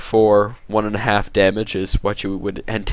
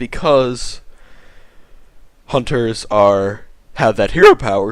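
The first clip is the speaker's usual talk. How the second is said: voice breaks, cracking partway through; 4 dB louder than usual. Player explaining why hunters have their hero power, voice cracking. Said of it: "what a voice crack!".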